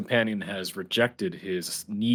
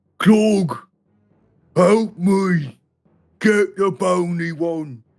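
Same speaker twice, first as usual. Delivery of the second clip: very loud, very high, dragged-out ogre bellow; 11 semitones higher, 8 dB louder than usual. A storyteller voices an ogre crying out to his companion: bellowing ogre cry. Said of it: "he gives a bellowing cry to his companion".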